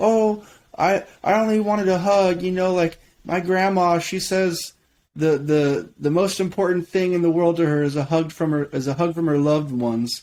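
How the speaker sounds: high, acted tearful sobbing, stumbling through words. Retelling how a girl on a show reacted: imitating Giuliana crying. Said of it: "Giuliana just starts, like, crying, saying".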